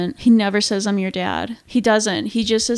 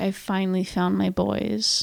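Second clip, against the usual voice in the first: mock whimper, quieter; 2 semitones lower, 6 dB quieter than usual. Retelling a movie scene where a father finds his sons: imitating someone whimpering.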